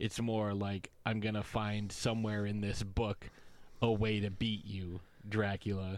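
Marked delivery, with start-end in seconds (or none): none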